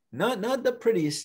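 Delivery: ordinary delivery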